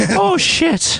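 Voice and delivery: put-on Irish brogue, pitched very high. Telling how their mom swears, the speaker imitates mom's irish brogue. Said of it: "say shit with an Irish brogue".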